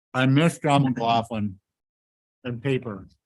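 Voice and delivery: speaking with mouth full. Speaker addresses the group while eating popcorn, speaking with mouth full. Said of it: "I just want to say with my mouth full".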